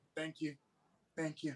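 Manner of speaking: put-on hushed, deflated, very quiet, flat monotone. Mimicking how someone came on with low energy: imitating someone's low energy. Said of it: "I was up here and you was a little down here".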